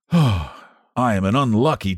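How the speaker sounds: ordinary delivery, nothing marked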